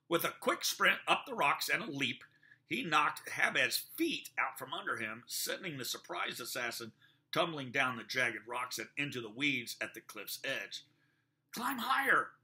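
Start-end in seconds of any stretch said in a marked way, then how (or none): 11.5-12.2 very high-pitched shout. Having knocked down an assassin, a man calls to a panicked boy, shouting. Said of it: "he shouted to the panicked boy".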